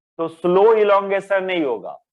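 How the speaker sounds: heavy stress on slow.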